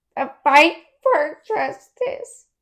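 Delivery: very slow, moved, emotional delivery. Saying an important quote aloud, deliver it emotional. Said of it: "She's getting pretty emotional".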